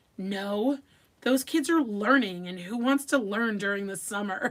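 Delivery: loud, scornful, revolted, disgusted dismissive tone. Retelling what someone said about the other camp, imitating someone saying it with disgust. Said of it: "with such disgust".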